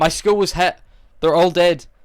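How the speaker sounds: wooden, badly acted, flat news-anchor delivery. Retelling how a dubbed news anchor delivered a line in a movie: imitating a news anchor's flat line. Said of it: "this is her on the news".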